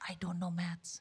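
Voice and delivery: very quiet, hushed, confiding half-whisper, barely there. Retelling telling a sympathetic interviewer the truth: retelling a half-whisper. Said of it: "I literally started whispering".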